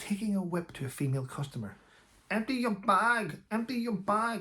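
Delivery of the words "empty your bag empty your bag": put-on non-British foreign accent, pitched up. Retelling video of a shop worker whipping a customer; non-British foreign accent. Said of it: "That's not a British accent".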